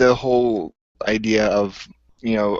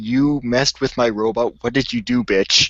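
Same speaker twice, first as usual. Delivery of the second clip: put-on angry voice. Acting out what a movie character should have said: imitating an angry character. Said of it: "at least be mad at her for".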